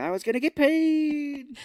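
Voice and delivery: very high yell, slow and stretched long. Joking about the dog left out of the sequel, Toto yelling.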